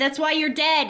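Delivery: snide, sarcastic comeback. Retelling what she said to him: imitating a sarcastic remark. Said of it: "They're sarcastic back and forth".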